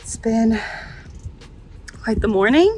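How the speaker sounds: out of breath. Pulling junk out of a Land Cruiser all morning, out of breath. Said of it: "I'm out of breath".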